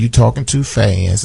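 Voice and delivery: ordinary talk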